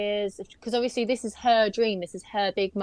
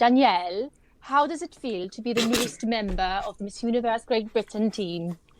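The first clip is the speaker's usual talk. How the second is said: cute, put-on Welsh accent. Performing a requested impression of Emma asking an interview question: imitating Emma's Welsh accent. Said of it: "I love the Welsh accent".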